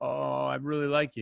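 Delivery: acted nervous voice. Coaching someone on how to respond to a guy they really like, acting nervous. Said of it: "act nervous".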